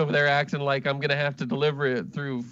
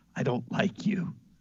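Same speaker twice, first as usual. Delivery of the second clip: whispered bear voice, low and close; 4 dB quieter than usual. The bear you grabbed and are carrying speaks into your ear: whispering bear voice. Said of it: "the bear whispers in your ear".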